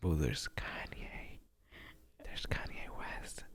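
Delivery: slow, breathy, hushed little whisper. Imitating how the other speaker said [name]: imitating someone whispering. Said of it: "Why you whispered a little bit when you said [name]?".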